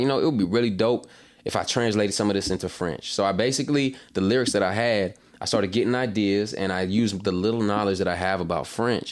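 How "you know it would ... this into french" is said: ordinary talk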